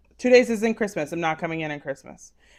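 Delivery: ordinary delivery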